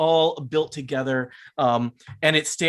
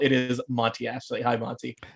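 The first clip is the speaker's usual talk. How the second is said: usual speaking voice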